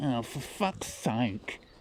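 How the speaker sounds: slow, gummy, toothless voice. Retelling what an old woman said to him, imitating a toothless gummy mouth. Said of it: "a mouth without any teeth".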